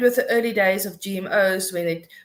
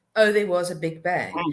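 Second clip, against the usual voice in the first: ordinary talk, nothing marked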